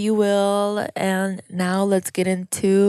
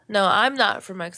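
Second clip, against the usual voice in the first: ordinary talk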